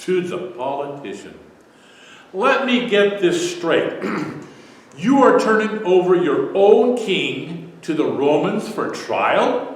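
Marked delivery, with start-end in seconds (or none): 2.3-9.8 dripping, venomous sarcasm, pitched up. Acting out Pilate's reply in a Bible discussion: acting out dripping sarcasm. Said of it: "dripping, with humorous sarcasm and poisonous barbs".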